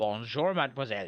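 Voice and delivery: put-on French accent for show. Trying out accents in a group conversation, doing a French accent. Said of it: "Can you do a French accent?".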